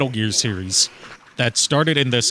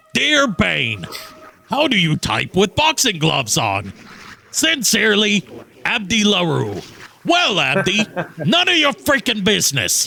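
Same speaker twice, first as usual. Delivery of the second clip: high swooping voice, pitched up, drawn out slowly; 7 semitones higher than usual. Showing how a comic villain voice would sound: Strong Bad voice. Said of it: "instead I go, like, fucking strong bad".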